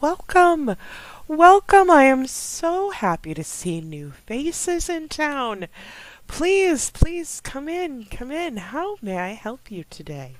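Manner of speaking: pitched very high, warm and welcoming. Game narrator voicing a townswoman greeting new faces in town, smiling welcome. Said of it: "she smiles at you and just throws her arms open wide".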